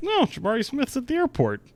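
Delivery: put-on high, tipsy, disbelieving blurt. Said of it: "I was three Don Limonadas deep when I saw that".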